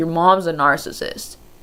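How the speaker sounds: ordinary delivery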